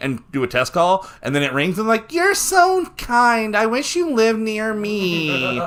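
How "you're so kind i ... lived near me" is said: high, very slow voice with me stretched long. Acting out a caller on a test call: high-pitched Matt impression. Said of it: "You didn't know I had a Matt impression".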